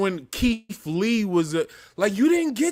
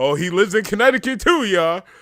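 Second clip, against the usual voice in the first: mocking, parroting voice; 5 dB louder than usual. Retelling what commenters often say to the speaker: mocking imitation of commenters.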